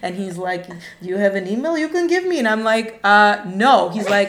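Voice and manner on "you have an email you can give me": put-on Transylvanian-sounding accent.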